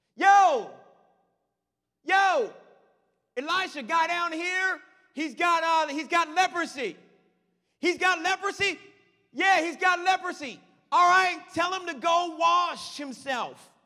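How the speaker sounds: loud shouting.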